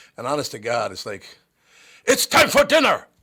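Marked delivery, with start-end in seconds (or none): 2.1-3.0 put-on shouty, angry German accent, very high and loud. Imitating the speaker's german grandparents at home, mock-angry german accent. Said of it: "German accent sounding angry".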